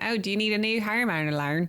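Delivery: put-on Australian accent, played for laughs. Retelling a joke from a skit, imitating an australian accent. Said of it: "Like an Australian".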